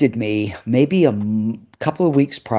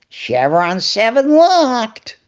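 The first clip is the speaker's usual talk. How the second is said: very high, zany slapstick clown voice; 11 semitones higher than usual. Retelling how they delivered a scripted line, in a Jerry Lewis voice. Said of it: "I'm full Jerry Lewis".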